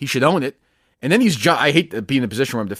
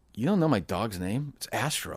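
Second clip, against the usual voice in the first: offended, indignant, outraged disbelief; 3 semitones lower, 11 dB quieter than usual. Retelling how a pitcher answered an interviewer: imitating Price, offended. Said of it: "he said it like, like, "How dare you not know the name of my dog?"".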